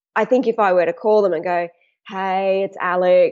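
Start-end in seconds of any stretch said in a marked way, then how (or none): 2.1-3.4 dull, lifeless monotone, much slower. Caller showing how a dull phone greeting to contacts would sound, in a dull flat tone. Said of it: "and do it in a dull tone".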